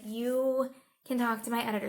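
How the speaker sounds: usual speaking voice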